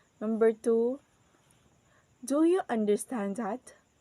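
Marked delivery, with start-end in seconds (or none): 2.2-3.7 voice rises on stand, then again on that. Demonstrating a rising intonation example question, rising pitch on stand and that. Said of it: "our voice is goes up at the words stand and that".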